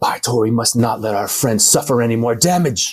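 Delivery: hushed stage whisper. Player in character, half-whispering to their axe while running in, half-whispering. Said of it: "I'm whispering to my axe".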